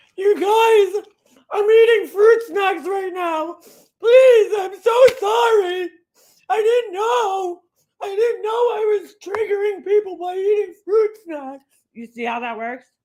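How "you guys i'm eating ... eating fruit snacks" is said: very high, slow, tearful fake crying voice. Mimicking someone apologizing about eating fruit snacks: mock crying voice. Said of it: "I could do that voice too".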